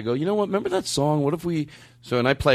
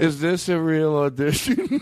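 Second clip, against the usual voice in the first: put-on, unsure, slow, second-guessing, self-doubting tone; 3 semitones higher than usual. Retelling what the other speaker muttered during a break: imitating someone sounding self-doubting. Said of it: "It's so self-doubting".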